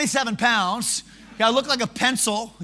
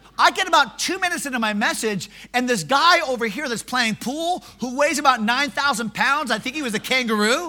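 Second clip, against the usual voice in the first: normal talking voice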